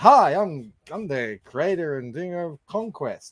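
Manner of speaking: bursting-with-energy, peppy, high-energy delivery. Answering whether they channeled Liam, showing how Liam talks: energetic Liam impression. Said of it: "Liam has way much more energy".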